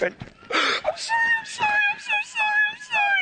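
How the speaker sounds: put-on sobbing, very high-pitched, tearful and pleading. The speaker acts out a woman apologizing as she grabs her, imitating someone crying. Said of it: "she's crying".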